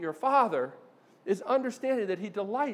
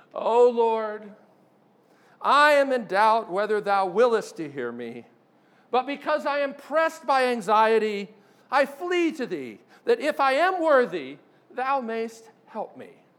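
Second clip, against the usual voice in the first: heavily sarcastic prayer-like delivery, raised and slow; 6 dB louder than usual. Quoting a writer mocking a doubtful prayer: sarcastic mock prayer. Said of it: "he can be very sarcastic at times".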